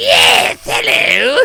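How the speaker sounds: rough, loud, shrieking villain voice. Retelling how a character was voiced: Cobra Commander voice. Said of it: "I'm just gonna do Cobra Commander".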